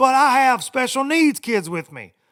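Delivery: very high, loud, drawn-out screaming. Retelling a man on a plane screaming at a lady over boarding, imitating screaming. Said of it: "And he's like screaming at this lady".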